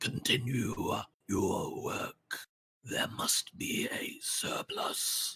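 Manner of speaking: hushed, rasping whisper. A narrator voicing a floating entity giving an order in the darkness, rasping voice. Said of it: "You hear his voice rasping in the darkness".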